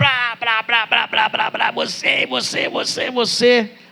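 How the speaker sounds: play-acted very high, slow, deliberate angry ranting. Acting out someone who comes in angry: imitating an angry rant. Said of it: "com raiva".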